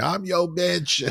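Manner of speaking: play-acted piercing, very high scream. Retelling an uncomfortable scene with Roy: imitating Attorney Varney screaming. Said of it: "Attorney Varney screaming".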